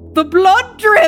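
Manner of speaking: very high, very loud, wavering quavering croak. An old Irishman near him sees the blood and calls out; croaked, quavering voice. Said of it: "croaked out in a quavering voice".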